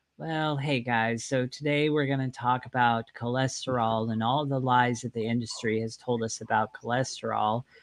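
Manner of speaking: dull, flat, unexcited monotone with zero energy. Showing how not to open a video on camera, use a flat, unexcited delivery. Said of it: "Don't just get on the camera and go ... How interested are you ... with that tone of voice?".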